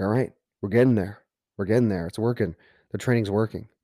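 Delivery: ordinary delivery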